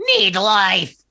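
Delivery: strange, unsettling, high, loud creature voice. Voicing a book that tries to eat a hand: weird book voice. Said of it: "It says in a weird, uh, voice".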